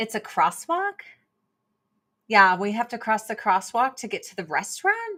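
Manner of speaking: question-like rise on crosswalk and restaurant. Imitating the way girls in LA talked: imitating question-like uptalk. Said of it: "everything that they said, it was kinda like a question".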